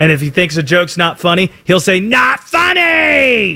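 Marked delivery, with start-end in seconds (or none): 2.0-3.6 high, very slow, dragged-out dismissive call.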